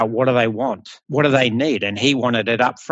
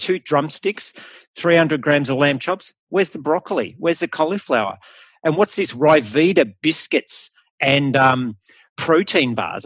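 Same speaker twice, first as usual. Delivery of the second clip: ordinary talk, nothing marked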